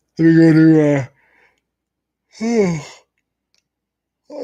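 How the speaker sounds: very high-pitched yawning delivery. Looking up an actor's name live for viewers, speaking through a yawn. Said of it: "I'm yawning".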